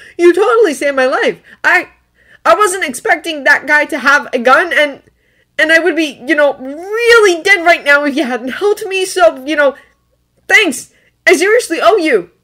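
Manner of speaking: nervous, very high voice. Reading a story aloud, voicing the kid thanking Bucky: nervously. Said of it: "the kid continues nervously".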